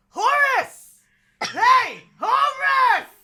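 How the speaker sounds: very high, very loud, shrill shouted call. A whooping creature calls out, understood as words by only one player, loud shouting call. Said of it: "I don't know how loud that is, I'm sorry".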